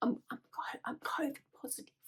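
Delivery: hushed, halting, embarrassed whisper. Retelling telling a hospital security guard something: imitating own whisper. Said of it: "I was trying to, like, whisper it".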